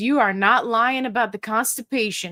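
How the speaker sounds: plain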